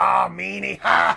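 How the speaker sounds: very loud, rough, hoarse, high jeering yell. Retelling what Sandman said after the promo: Sandman impersonation. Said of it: "That's a great Sandman impersonation".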